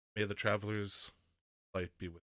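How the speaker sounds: whispering. Giving a coin to a woman as a character: whispering in character. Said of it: "I would like to whisper to her".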